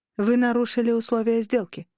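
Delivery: ordinary delivery, nothing marked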